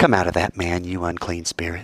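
calm, even, plain, matter-of-fact tone. Quoting Jesus ordering an unclean spirit out, said, not screamed. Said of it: "not screaming, ... I like to say it like that".

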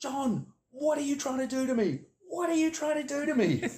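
very high, shrill, loud screaming. Retelling a man screaming down the phone at the print-press man, imitating a scream. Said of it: "he just screamed out".

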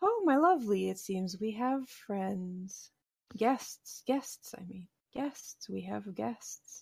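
woman's voice. A game master voices a woman the players hear, female voice. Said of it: "a female voice go".

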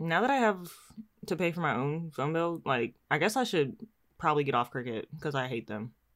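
ordinary delivery

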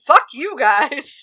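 shouted outburst. Joking about what sleepy listeners hear last: pretend yelling. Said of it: "As I'm yelling".

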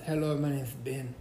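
imitated, fake slight Spanish accent. Acting out how Benny introduced himself, in Benny's put-on little Spanish accent. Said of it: "Benny put on a little Spanish accent".

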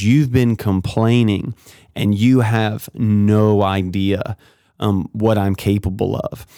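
ordinary talk

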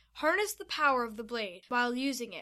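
ordinary talk

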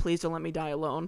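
put-on tearful, crying voice. Retelling praying on a shower floor while sick: imitating own tearful prayer. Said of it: "I was crying and I was praying".

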